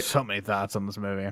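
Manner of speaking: mocking, dry, deadpan sarcastic tone. Asked for thoughts on a movie, answering: sarcastic. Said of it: "Definitely being sarcastic".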